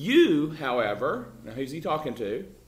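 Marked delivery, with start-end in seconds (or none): 0.0-1.3 "you" stressed hard and louder, emphatic. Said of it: "Paul says quite emphatically".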